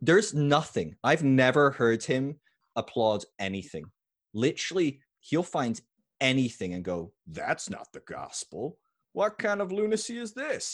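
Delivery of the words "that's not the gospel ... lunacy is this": very high, shrill preacher rant with big swoops. Describing a preacher who tears others apart: Todd Friel impression. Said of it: "That's pretty good Todd Friel".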